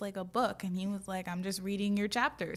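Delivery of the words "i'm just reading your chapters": put-on offhand, casual tone. Retelling how he mentioned reading it: imitating an offhand, in-passing tone. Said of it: "He really was acting like this was".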